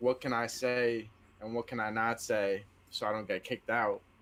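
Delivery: plain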